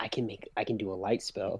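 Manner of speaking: hushed, fast whisper. Answering another player's question in character: whispering. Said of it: "or I whisper back".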